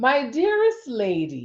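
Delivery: put-on formal, very proper, swooping, drawn-out lady voice. Reading a passage aloud, in a very proper manner. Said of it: "I feel like I have to read that in a very proper manner".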